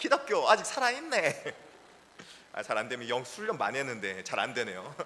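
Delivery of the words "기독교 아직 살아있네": very high-pitched, loud Gyeongsang accent. A Seoul speaker attempts a phrase in Gyeongsang dialect: attempted Gyeongsang accent. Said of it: "경상도 말로".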